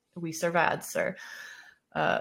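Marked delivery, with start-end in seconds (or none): none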